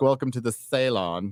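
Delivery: slow, drawn-out, put-on London accent. Imitating how people in London say the word: imitating a London accent. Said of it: "that's how they fucking say it in London".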